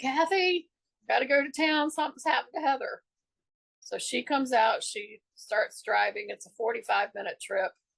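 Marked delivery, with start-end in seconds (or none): 0.0-3.0 mock urgent, high-pitched scream. Retelling calling to a best friend from the porch: retelling own past scream. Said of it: "and I screamed".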